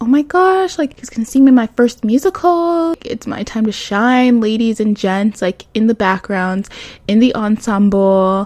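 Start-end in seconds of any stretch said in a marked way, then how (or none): 0.0-5.4 acted excited voice, higher pitch. Retelling thoughts before a musical, acting out own past excitement. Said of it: "so I was super excited".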